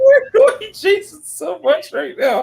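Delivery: high, slow, drawn-out mock sobbing.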